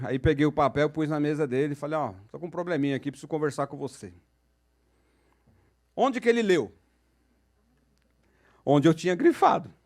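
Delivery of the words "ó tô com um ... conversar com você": soft, fast, put-on gloomy, downcast murmur. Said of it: "fazendo aquele teatro".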